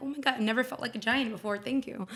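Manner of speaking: normal talking voice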